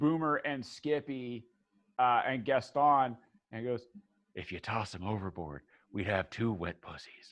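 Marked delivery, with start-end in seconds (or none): 4.3-7.3 quiet, soft, hushed half-whisper. Voicing a character who half-whispers to other characters: half-whispering in character. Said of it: "Tanith whispers to Nico".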